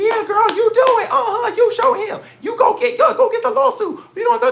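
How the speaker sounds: very high, shrill, loud hype cheering. Imitating women who urge her to get the lawsuit: imitating women egging her on. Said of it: "there are bitches that's like".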